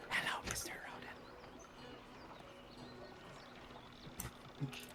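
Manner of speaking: whispering. Replying to another character named Rodent, in a whisper. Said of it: "I reply back with a whisper".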